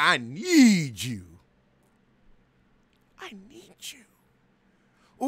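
put-on breathy whisper. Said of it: "she hit him with a [name] whisper".

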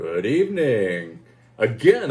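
on-air radio announcer voice. Opening another video by greeting viewers, in a radio announcer voice. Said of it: "I get to use my radio voice".

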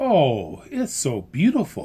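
plain

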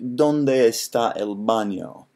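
Italian-sounding accent. Asked to say something in Spanish, answering in an Italian-sounding accent. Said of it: "That was like an Italian accent".

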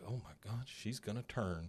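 put-on excited voice. Narrating a story, voicing a driver's thought as a retold excited inner thought. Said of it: "Hank gets pretty excited because in his head".

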